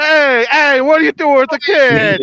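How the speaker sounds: very loud, high put-on New Jersey accent holler. Reacting to a four-year-old on a motorcycle, speaker imitates a new jersey accent. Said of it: "especially with the New New Jersey accent too".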